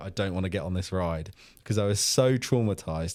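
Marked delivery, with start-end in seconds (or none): 0.0-1.3 put-on tearful crying voice. Retelling refusing to get on a ride as a child: imitating own past crying. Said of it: "And I remember crying, going".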